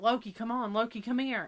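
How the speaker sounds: loud yelling, calling out. Retelling calling the dog back from the neighbor's house, retelling own yelling.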